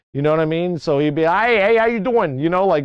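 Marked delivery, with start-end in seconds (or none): 1.2-2.4 put-on heavy Long Island accent, higher. Imitating a former teacher: thick Long Island accent. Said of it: "He had this heavy, thick Long Island accent too".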